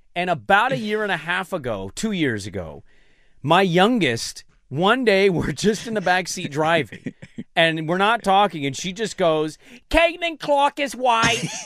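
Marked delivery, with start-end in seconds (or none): 9.9-11.4 put-on childlike British accent, pitched high. A parent retells their youngest's sudden backseat remark, imitating a child's british accent. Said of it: "with like a British accent".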